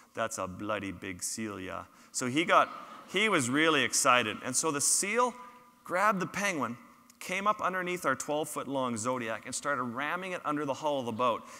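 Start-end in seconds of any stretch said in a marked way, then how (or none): 0.2-1.9 put-on deep-voiced, low, soft Swedish accent. Retelling Joran's excited reaction to a massive leopard seal, in Joran's deep Swedish accent. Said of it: "in his deep Swedish accent".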